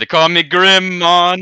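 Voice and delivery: put-on mixed Jamaican and Brazilian accent. Asked his name, introducing himself as Grim in a mixed Jamaican-Brazilian accent. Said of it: "Your accent is like a, almost like a mix between fucking Jamaican and Brazilian".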